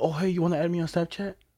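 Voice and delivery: put-on overeager flirty voice. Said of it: "he pulled up like this".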